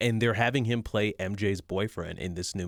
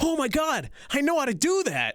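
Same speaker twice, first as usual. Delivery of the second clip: mock shrill, high, swooping, delighted excited gush; 4 dB louder than usual. Retelling an actor's reaction to a lightsaber move: imitating someone getting excited. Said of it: "he got really excited".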